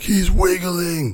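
acted-out, piercing, shrill, very high shriek. Speaker retells what another man screamed, retelling a scream. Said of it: "he started screaming".

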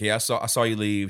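ordinary talk

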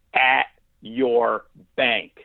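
imitated firm tone. Retelling what a woman said through the wall, imitating her firm voice. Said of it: "in the most firm of voice".

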